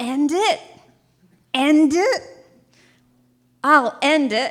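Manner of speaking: hard-nosed, loud, high-pitched shouting. Retelling what a man yelled back at the speaker, imitating someone yelling. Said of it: "And he yells".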